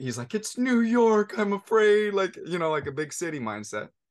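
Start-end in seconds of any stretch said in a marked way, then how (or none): 0.0-2.1 put-on crying child voice, much higher, louder, slower. Father retelling what his oldest son said, imitating a crying child. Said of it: "my oldest son is crying".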